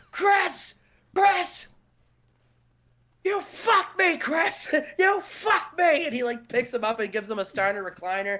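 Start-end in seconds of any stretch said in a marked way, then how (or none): 0.2-6.1 very high, slow, drawn-out enraged rant. Retelling a wrestling segment where Scott Steiner is pissed: imitating an angry Scott Steiner. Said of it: "Scott Steiner is pissed".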